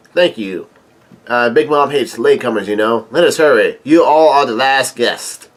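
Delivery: ordinary talk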